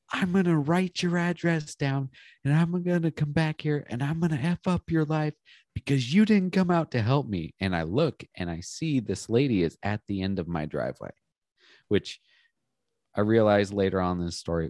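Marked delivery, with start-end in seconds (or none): 0.1-7.5 mock high-pitched screaming. Retelling a woman at his driveway shouting at him, imitating a screaming woman. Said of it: "you're screaming at me for not helping you".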